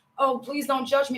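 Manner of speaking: ordinary talk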